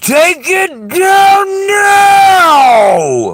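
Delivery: very loud, high, shrill shriek, stretched out long. Retelling how Jamie screamed at the speaker: imitating Jamie screaming. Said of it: "You can hear her screaming at me".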